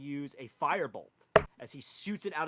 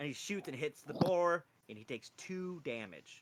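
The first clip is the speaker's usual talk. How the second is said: normal talking voice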